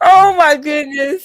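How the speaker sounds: speech broken by laughter. Reacting to a story about a cat, laughing while talking. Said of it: "I can't stop laughing".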